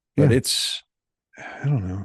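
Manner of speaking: sad, dejected, downcast, slow delivery. Wrapping up a talk about a disliked movie, sounding sad. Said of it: "You sound so sad now".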